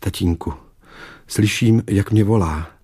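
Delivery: ordinary delivery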